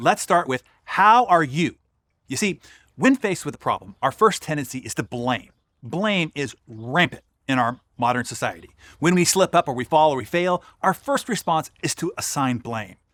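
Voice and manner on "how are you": slow, deliberate, raised voice, each word weighed. A speaker repeats part of a question more slowly so listeners get it. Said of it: "Let me say it slower".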